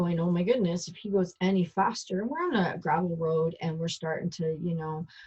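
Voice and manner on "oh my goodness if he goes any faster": normal talking voice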